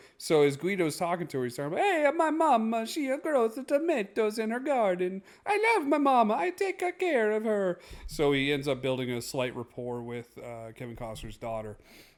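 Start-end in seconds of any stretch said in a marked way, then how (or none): 1.9-7.8 put-on very high, loud, slow, drawn-out Italian accent. Retelling how Guido chats with the daughter, in Guido's Italian accent. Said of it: "in his Italian accent".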